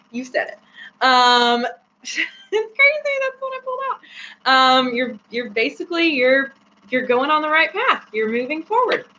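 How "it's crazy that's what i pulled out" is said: high, giggling through the words. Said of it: "That's why I'm giggling".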